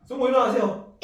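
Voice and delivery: high, loud calling-out voice.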